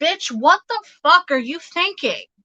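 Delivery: blunt, high, loud yelling outburst. Relaying what a yelling spirit says to a sitter: imitating a yelling spirit. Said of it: "this person's yelling at me".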